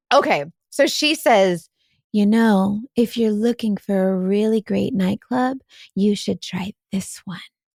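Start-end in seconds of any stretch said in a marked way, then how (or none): 2.1-7.4 heavily sultry, alluring voice, laid on thick. Retelling what a stranger said after being asked to do it: Jessica Rabbit voice. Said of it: "she sounds like freaking Jessica Rabbit".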